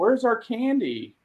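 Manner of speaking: put-on high, slow, demanding child voice. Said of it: "kids are like".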